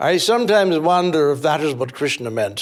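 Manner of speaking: put-on English accent. Quoting Eliot's musing about Krishna, in a fake English accent like Eliot's. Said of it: "Do you like my English accent?".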